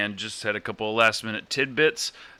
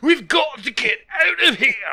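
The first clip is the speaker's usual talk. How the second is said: put-on Scottish-accented Russian voice, higher and louder; 6 dB louder than usual. Playing a Russian on a mountain in a bit: Russian with Scottish accent. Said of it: "radioactive Russian, Scottish accents".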